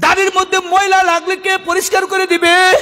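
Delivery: high, shouting, tearful crying voice.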